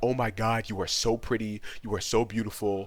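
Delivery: put-on effusive gushing. Retelling how a friend flirted with a decoy: imitating someone laying it on thick. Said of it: "laying it on pretty thick".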